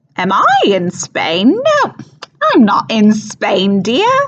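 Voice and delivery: put-on high, loud, thick overdone Cockney accent. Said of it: "on stage it's very, very thick, overdone, and kind of silly".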